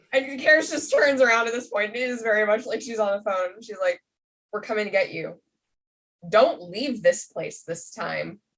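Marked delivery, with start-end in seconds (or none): 4.5-8.3 put-on voice with implicit menace under the words. Recapping a scene, acting out Karis on the phone to Rue: Karis's mock-threatening voice. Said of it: "there was an implicit threat in that voice".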